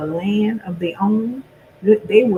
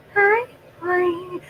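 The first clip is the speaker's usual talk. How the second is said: soft, gentle, high-pitched, soft-spoken voice; 11 semitones higher, 6 dB quieter than usual. Retelling a phone call where the lady answered, imitating soft quiet talking. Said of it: "all that soft talking".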